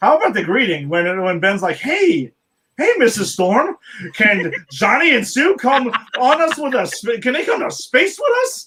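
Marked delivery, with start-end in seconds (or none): 1.8-8.7 jolly, high, cheery sing-song with swinging pitch. Retelling how Ben greets Missus Storm in the film: imitating Ben's jolly greeting. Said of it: "genuinely jolly about this".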